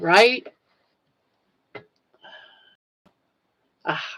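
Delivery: tearful, crying while talking. Thanking viewers of a daily channel, crying while talking. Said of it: "I gotta stop crying".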